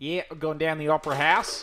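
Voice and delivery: loud, convincing, put-on Australian accent. Recalling someone who nailed an Australian impression, in an Australian accent impression. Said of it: "nailed a an Australian impression".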